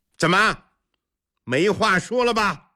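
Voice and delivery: self-satisfied, a little gloating. In a murmuring palace hall, a man taunts a rival who has fallen silent, somewhat smug. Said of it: "有些得意地说".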